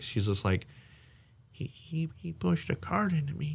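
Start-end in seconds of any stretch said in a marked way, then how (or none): 1.5-3.6 put-on small, soft, quiet, high, slow little old lady voice. Retelling what a little old lady said after a cart hit her: imitating a quiet voice. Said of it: "kind of a quiet voice".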